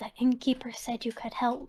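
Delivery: secretive stage whisper. Voicing a character who asks a stranger for help: very quiet whisper. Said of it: "really quietly whisper".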